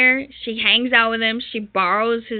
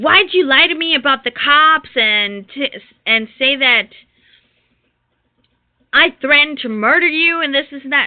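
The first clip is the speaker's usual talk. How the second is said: put-on loud, accusing, shouted yell; 3 semitones higher, 5 dB louder than usual. Retelling a call where the mother yelled at the speaker: imitating someone yelling. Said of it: "she started yelling at me".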